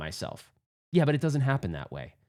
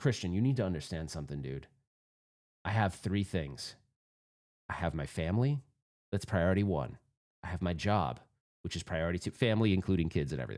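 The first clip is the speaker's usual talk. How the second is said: grave, very low, serious tone; 8 semitones lower, 7 dB quieter than usual. Retelling what was said to a friend after a game: imitating own serious tone.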